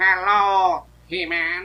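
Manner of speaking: high, loud nasal voice, blocked-nose tone. Explaining the original actor imagined him without a nose, in nasal Skeletor voice. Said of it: "That that that tone of voice".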